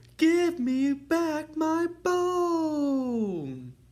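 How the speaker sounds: put-on teeny tiny voice. Reading a children's story aloud, the teeny tiny voice speaks a teeny tiny bit louder. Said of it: "the teeny tiny voice said a teeny tiny bit louder".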